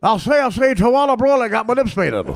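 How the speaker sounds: cartoon rooster voice, pitched high, weight on I'll say. Acting out a cartoon rooster asking a lost duckling questions: Foghorn Leghorn voice. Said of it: "Sharpton Leghorn".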